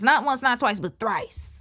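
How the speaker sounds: ordinary delivery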